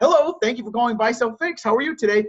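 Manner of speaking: nice, friendly, smiling customer-service voice. Showing how to answer a customer call nicely: smiling, nice phone greeting. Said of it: "If you just smile and you're nice to people, it's easy".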